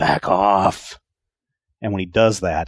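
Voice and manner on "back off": growling, snarling beast voice. Speaker voices a clawed creature that just landed, snarling. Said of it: "he just snarls".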